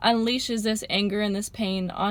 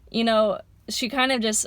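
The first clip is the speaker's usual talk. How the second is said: ordinary delivery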